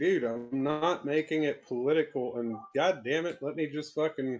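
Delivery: ordinary delivery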